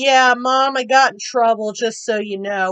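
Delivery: ordinary talk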